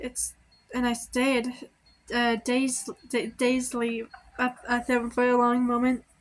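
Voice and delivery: stuttering. Shy speaker reading a story aloud, stuttering. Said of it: "that's why I'm stuttering so much".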